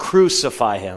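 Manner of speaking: ordinary talk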